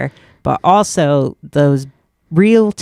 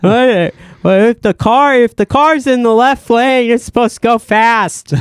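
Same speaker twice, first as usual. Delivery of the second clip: put-on dumb guy voice, pitched higher; 7 semitones higher, 3 dB louder than usual. Showing the kind of bit wanted on stage: dumb guy voice. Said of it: "dumb guy voice".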